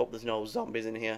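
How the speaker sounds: voice cracking. Speaker playing a game and talking to viewers; voice cracking. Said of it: "Voice crack!".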